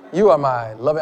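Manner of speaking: low, soft, sultry, seductive voice. Speaker looks at his wife and addresses her, in a sexy voice. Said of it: "That's my sexy voice".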